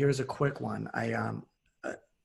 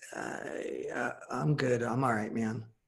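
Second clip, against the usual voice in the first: slow, crackly voice with a hesitant pause. Retelling how someone answered a question on a phone call: imitating a crackly voice with a pause. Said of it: "kinda like this crackly voice with a pause".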